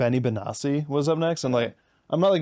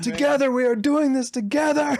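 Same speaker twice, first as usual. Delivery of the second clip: play-acted, shrill DJ scream, pitched very high, hype shout; 13 semitones higher than usual. Recalling a DJ who kept shouting about California: imitating a DJ screaming. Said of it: "He just kept screaming California".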